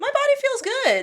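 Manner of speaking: squeaky, very high-pitched little voice. Asked how her body feels in the training program, she answers: high-pitched voice. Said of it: "She said in a high pitched voice".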